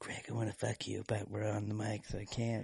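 super quiet, hushed, barely-there voice. Imitating how the other speaker's voice gets super quiet. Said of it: "I love how your voice, like, gets super quiet".

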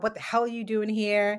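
ordinary talk, nothing marked

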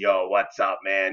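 rough, gravelly voice. Recalling meeting Tony and his famous voice: Tony's gravelly voice. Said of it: "this very famous gravelly voice".

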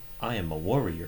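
put-on voice assistant voice. Mocking the mom's line delivery at the end of Onward, repeat it, said like Siri. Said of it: "she says it like Siri".

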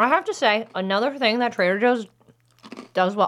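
muffled speech, mouth full of food. Tasting Trader Joe's food for listeners, talking with mouth full. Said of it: "listening to me talk with my mouth full".

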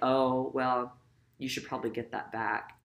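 ordinary talk, nothing marked

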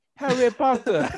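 put-on Nigerian accent, high-pitched. Declaring himself the new harry potter, saying the name in a nigerian accent. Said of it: "Why'd you say it like he was Nigerian?".

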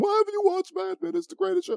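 very high, scolding, berating nagging tone. Retelling how his co-host berates him every time, imitating Justin Polizzi berating. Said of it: "He berates me every time".

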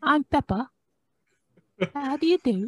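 cartoon-style voice, pitched very high. Introducing oneself on a podcast: Peppa Pig voice. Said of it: "A K A the uncultured Peppa Pig".

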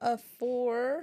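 voice breaking and cracking mid-word. Giving a player a score of four, voice cracking. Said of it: "My voice cracked".

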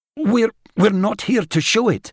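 high voice, stammering and tripping over words. Narrator reads a man answering a monster, stuttering. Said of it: "stuttered Gad, with his hands shaking".

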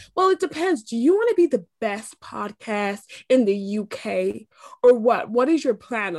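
horrible, bad, put-on American accent. Speaker retells what an american guy on stage asked, horrible american accent. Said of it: "This is a horrible accent".

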